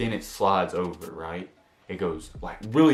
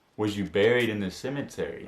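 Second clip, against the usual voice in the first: normal talking voice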